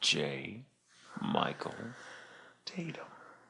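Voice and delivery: deep, very soft, hushed public radio announcer. A podcast host introducing the show and his co-host, in an NPR announcer voice. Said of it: "N P R on it".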